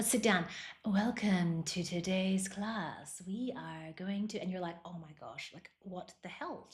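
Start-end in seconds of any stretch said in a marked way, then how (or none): 0.9-4.4 put-on very slow, calm, soothing yoga-teacher voice. Imitating the instructor as she starts the class: put-on yoga voice. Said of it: "her whole voice just changed. And then the whole class, she's speaking in yoga voice".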